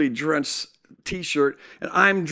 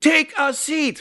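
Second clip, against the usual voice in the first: angry, uncompassionate tone, pitched up; 12 semitones higher than usual. Retelling the nurse's reply to a request: imitating someone getting mad. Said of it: "she gets mad at me".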